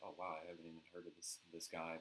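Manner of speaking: ordinary talk, nothing marked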